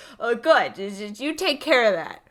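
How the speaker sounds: put-on sarcastic dismissive voice. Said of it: "Like, just sarcastic".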